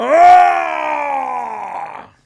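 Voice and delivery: high, loud, angry roaring yell. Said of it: "Spock gets mad. he's like".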